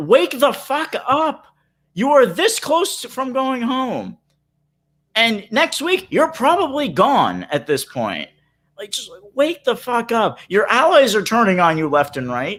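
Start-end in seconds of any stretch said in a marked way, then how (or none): 0.0-11.1 high-pitched, half-yelled put-on scolding rant. Retelling screaming at a player on tv: retelling screaming at her. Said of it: "screaming at her, saying".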